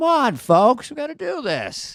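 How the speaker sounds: slow, swooping, drawn-out, high sing-song call. Chatting with guests and doing a quick Joe Biden impression. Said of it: "as Joe Biden would say".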